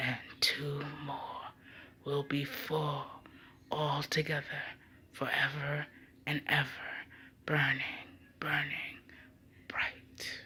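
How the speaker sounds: low, strange whispered murmur. A dying old man speaks to the lovers after a long pause, voice lowering strangely. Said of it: "The hideous disease of which Sir [name] was dying had touched his brain. / Sir [name]'s face seemed at best to be made of fine parchment, drawn skin tight over a wooden mask, in which two sunken eyes".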